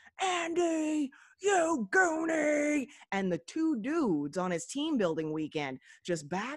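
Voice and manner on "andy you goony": shrill, very high, loud screech, word drawn out. Recounting a man's meltdown on a team-building weekend, retelling his scream. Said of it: "He screams".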